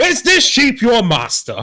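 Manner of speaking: very high, swooping, drawn-out loud yell. Interrupting a wizard character in a game scene: yelling at him. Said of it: "I was gonna yell at him".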